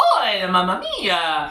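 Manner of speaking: hammed-up Italian accent with swooping pitch. Coaching someone to play a character with more feeling, in a Super Mario voice. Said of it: "You gotta do it more like this".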